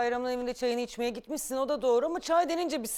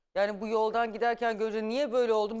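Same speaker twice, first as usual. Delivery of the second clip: ordinary talk, nothing marked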